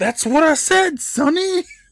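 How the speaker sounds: yelling at full blast, very high, loud, shrill, rising. Retelling a story where the mask grabs a shirt: imitating a yell. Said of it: "grabs Chuck's shirt and yells".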